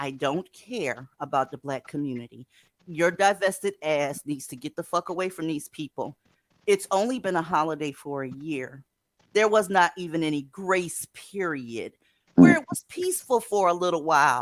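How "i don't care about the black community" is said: slow, low-pitched, deliberate, calm delivery. Speaking to the audience, saying it slow and real calm. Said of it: "I want to say that slow and real calm".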